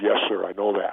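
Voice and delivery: ordinary talk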